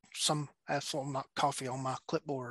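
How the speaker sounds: hushed, quiet mutter under the breath. Retelling how a coworker reacted to a coffee-stained clipboard: imitating a muttered remark. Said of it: "under his breath".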